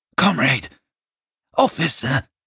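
high-pitched, pleading, begging outcry. A man on his knees, hands clasped, crying out to an officer. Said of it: "He cried".

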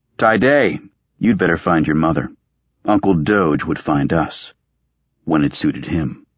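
ordinary delivery

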